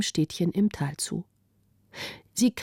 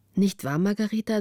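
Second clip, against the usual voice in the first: plain reading voice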